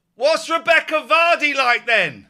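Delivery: shrill, very high, loud shout. Retelling how a waitress called across the restaurant: imitating a waitress shouting. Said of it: "the waitress shouted over".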